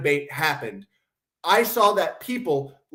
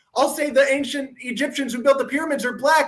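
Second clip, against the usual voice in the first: high, mocking, put-on pleading tone. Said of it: "You're the one going".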